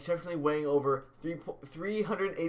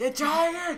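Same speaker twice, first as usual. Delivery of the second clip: mock very high, loud, shrill drunken holler; 12 semitones higher, 5 dB louder than usual. Acting out a drunk person calling to a tiger: imitating a loud drunk person. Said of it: "drunken person ever do anything quiet".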